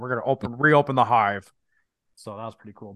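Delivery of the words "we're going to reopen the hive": put-on strange, weird-sounding British accent. Quoting Jason Isaacs's scientist line at a film's end: weird British accent. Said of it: "in his weird like British accent".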